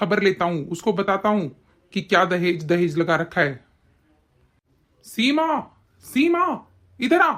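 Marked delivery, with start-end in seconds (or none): 5.1-7.3 high, drawn-out, loud shout. After telling a crying woman not to cry, he calls another woman over, shouting. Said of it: "क्यों चिल्ला रहे हो?".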